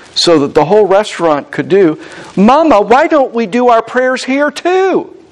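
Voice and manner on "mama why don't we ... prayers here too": put-on eager child voice, blurted, close to shouting. Retelling the daughter speaking to her mother at a restaurant table, a child's near-shout. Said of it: "in a shout-like voice like kids are known to do".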